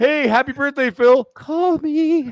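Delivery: very high, drawn-out, clingy, needy pleading voice. Imitating a birthday message to Phil: Cliff Bleszinski as desperate clinger. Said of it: "He's like the desperate, like, stage five clinger".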